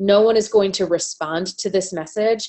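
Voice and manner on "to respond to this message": ordinary talk, nothing marked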